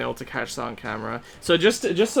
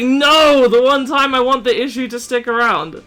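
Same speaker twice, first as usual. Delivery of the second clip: angry, mad, fed-up protesting tone; 10 semitones higher, 9 dB louder than usual. Retelling own reaction when the glitch fixed itself: retelling being mad. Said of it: "And I was so mad".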